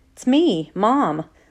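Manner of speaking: nervous voice. A mother answering her son Chase, who doesn't recognize her in hospital, nervous voice. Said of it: "she says in a nervous voice".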